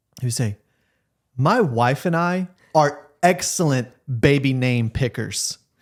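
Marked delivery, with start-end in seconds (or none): 1.4-5.6 slow, confident, self-assured and opinionated. Doing an impression of a buddy confident about baby naming: imitating Josh. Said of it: "let me do an impression of Josh".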